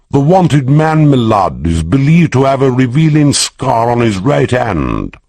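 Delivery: pompous, lofty voice. Narrator voicing Corcoran playing a court policeman to Jonathan, high-flown court policeman tones. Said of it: "He adopted the high-flown tones of a court policeman".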